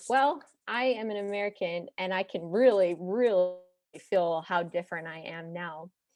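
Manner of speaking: plain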